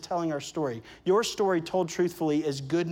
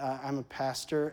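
acted sheepish tone, quieter; 3 semitones lower, 7 dB quieter than usual. Retelling answering strangers who asked their job, retelling a sheepish admission. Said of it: "I sheepishly said".

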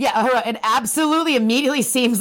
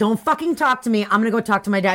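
usual speaking voice

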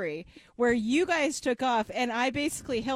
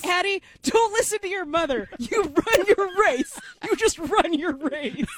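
mock adult man's voice yelling, higher; 6 semitones higher, 5 dB louder than usual. Retelling how a dad yelled at addie during her race, imitating a dad yelling. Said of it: "the dad's yelling".

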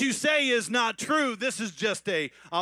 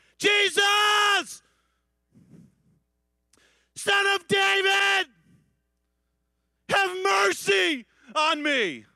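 mock very high cry, "Jesus" stretched long; 10 semitones higher, 4 dB louder than usual. Retelling how a man by the road called to jesus: acting out a shout. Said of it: "he just started to shout".

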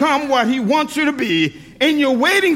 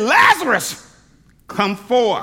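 commanding, authoritative call; 2 semitones lower than usual. Retelling a story of a man called out of a tomb, retelling a loud call. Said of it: "With a loud voice".

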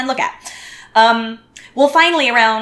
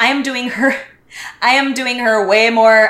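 usual speaking voice

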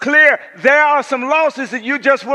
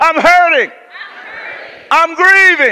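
deliberate, slow, loud collective shout; 4 semitones higher, 4 dB louder than usual. A speaker leads the crowd to repeat after them, shouting.

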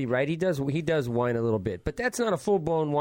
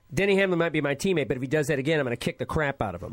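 usual speaking voice

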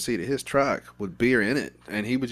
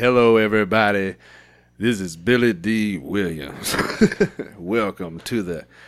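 loud stadium loudspeaker announcer voice; 5 dB louder than usual. Recalling ads they played over the loudspeaker, doing a Billy Dee Williams impression. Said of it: "They would play his shit through the loudspeaker and be like".

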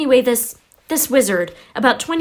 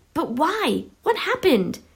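pressing urgent voice, pitched up; 6 semitones higher, 4 dB quieter than usual. Reading the boy's question to the angry man: urgent question. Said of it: "Harry asked urgently".

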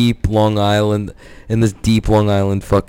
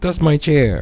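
put-on elderly voice, pitched higher; 6 semitones higher than usual. Retelling a resident's fight over his chair: imitating a nursing home resident. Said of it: "He's like".

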